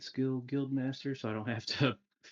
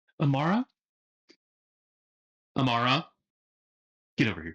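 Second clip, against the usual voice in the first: loud hollering yell; 7 dB louder than usual. Calling a misbehaving dog over: yelling at a dog. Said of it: "Sorry, I keep yelling".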